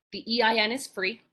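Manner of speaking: insistent emphatic delivery. Presenting a slide on grant requirements, tell people the e i n is free, very loud. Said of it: "I just want to say this very, very loudly".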